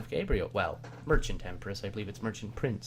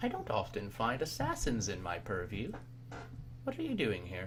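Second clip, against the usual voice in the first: empress character voice, soft and swooping; 5 dB quieter than usual. Game master voices the Empress addressing Maria's assassin character, in the Empress voice. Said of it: "Anyone else wish to speak to the Empress at all? / So she looks at your rum and goes, / Anyone else wish to speak to the Empress at all?".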